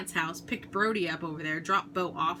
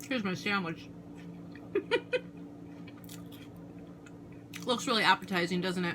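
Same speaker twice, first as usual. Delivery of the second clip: speaking with mouth full of food, chewing. Vlogging to camera while eating a sandwich, talking with food in mouth. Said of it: "Sorry for talking in the camera with food in my mouth".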